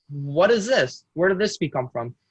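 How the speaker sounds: usual speaking voice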